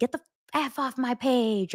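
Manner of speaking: mock yelling. Describing how people get angry and yell: imitating someone yelling. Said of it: "judge and yell and say".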